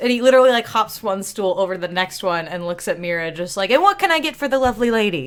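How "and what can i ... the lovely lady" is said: smarmy, charming salesman voice, pitched up. Retelling how a man hopped a stool over to greet a woman, snake-oil salesman voice. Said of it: "full snake oil salesman on this one".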